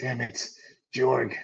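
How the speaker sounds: put-on gruff, reluctant hero voice. Voicing a player character reacting in a game: Witcher voice. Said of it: "You're doing Witcher".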